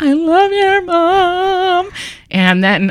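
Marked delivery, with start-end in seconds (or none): 0.0-1.9 mock very high, slow, drawn-out teary blubbering. Recalling breaking down in front of a class, retelling sobbing. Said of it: "just sobbing in front of the class".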